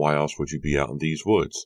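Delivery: plain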